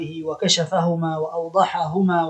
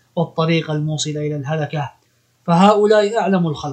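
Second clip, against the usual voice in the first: normal talking voice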